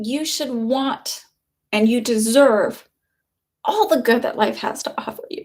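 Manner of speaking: tearful, halting crying, voice breaking mid-phrase. Addressing an audience, the speaker gets emotional and speaks while crying. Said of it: "I don't know why I'm crying".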